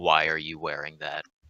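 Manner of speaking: quiet, menacing, threatening tone. Playing Gust, who has spotted the amulet, in a quiet, menacing voice. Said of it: "in a quiet, menacing voice".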